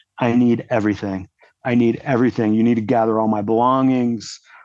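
acted urgent, adamant, demanding, insistent repeated delivery. Retelling being put in a car after the crash: imitating his own loud demanding. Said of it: "I was being pretty loud and demanding".

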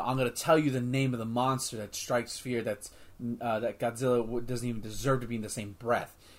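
plain

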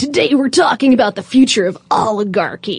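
movie trailer announcer voice. Joking with a co-host about how to introduce an episode, in a movie announcer voice. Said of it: "use the movie announcer voice to say".

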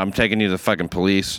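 ordinary delivery

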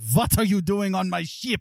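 heavy put-on German accent, laid on thick. Acting out a man catching you trying to board his ship, thick accent. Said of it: "in his thick armor Schmidt accent".

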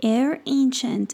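ordinary delivery

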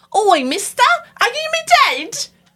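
very high, loud, creepy, spooky Victorian doll voice. Retelling what a costumed guest kept repeating: haunted Victorian doll voice. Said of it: "dressed as a haunted Victorian doll".

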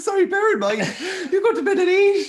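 laughing hard, high and loud.

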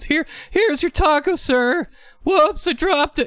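put-on very high, just-broken pubescent teen voice. Responding to a friend whose voice changed, in a Simpsons pimple-faced teen voice. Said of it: "You sound like the pimple faced teenager from The Simpsons".

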